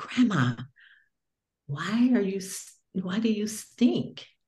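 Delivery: put-on whisper. Retelling a grandson's whispered question to his grandma: imitating a whisper. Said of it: "he came to me and he whispered".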